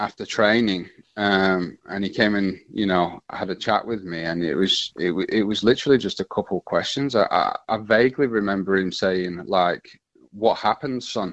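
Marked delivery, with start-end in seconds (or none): 10.3-11.3 put-on speaking in Scottish accent. Retelling a talk after training, imitating Sir Alex Ferguson's Scottish accent. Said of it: "in his Scottish accent".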